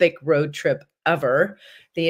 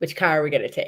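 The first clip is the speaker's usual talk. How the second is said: put-on Boston-accented speech. Retelling a film scene, quoting Jeremy Renner's character's reply, Jeremy Renner's Boston accent. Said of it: "with his Boston accent".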